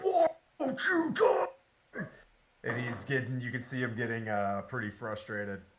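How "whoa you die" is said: very high, best-effort put-on dragon voice. Narrating a dragon that blows flame onto Manu, dragon voice. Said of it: "It's the best dragon voice I got".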